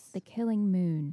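audiobook-style narrator reading voice. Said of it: "it sounded like you're listening to an audiobook".

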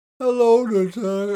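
weird, half-robotic moan. Speaker mocking a voice they disliked: weird moaning, waking-up voice. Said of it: "sounds like someone slash moaning slash like waking up".

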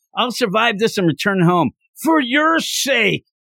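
mild, half-shouted yell. Recapping a scene where a man yells to his wife, retelling a yell. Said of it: "He's yelling".

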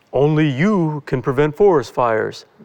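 rough, bad attempt at a cartoon bear voice. Describing a forest-fire TV ad, doing a Smokey the Bear impression. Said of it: "this is my best impression".

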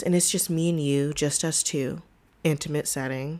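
slow, late-night slow jam delivery. A podcast host addresses the listener directly in a slow jam voice. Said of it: "That's my slow jam voice".

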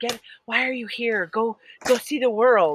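put-on whisper. Recalling a man whispering in the speaker's ear, imitating the whisper. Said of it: "He whispered stuff in my ear".

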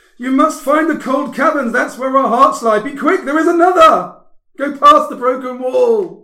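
very high, very loud, shrill, piercing screaming. Voicing a mother who grabs the player's character: screaming. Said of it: "she grabs you and screams".

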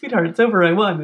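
put-on British accent. Joking along about an actor's impression: Patrick Stewart impression. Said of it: "exactly him trying to be Patrick Stewart".

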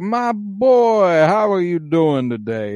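put-on slow Southern drawl, drawn-out boy. Recalling a movie character's first line, imitating De Niro's Southern drawl. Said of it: "the Southern drawl and stuff".

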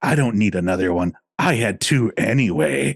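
quiet, side-of-mouth whisper. Retelling a quiet joke said from the side of the mouth: imitating own side-of-mouth whisper. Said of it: "you kinda talk out the side of it".

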